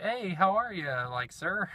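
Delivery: genuinely nerdy, high-pitched voice. Retelling own greeting to a cool cashier: imitating own nerdy greeting. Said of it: "real nerdy".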